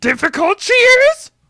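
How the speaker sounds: put-on small, wise-sounding alien voice. Asking about a tough opponent in Yoda voice.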